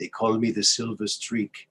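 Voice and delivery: put-on French accent. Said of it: "he had a French accent".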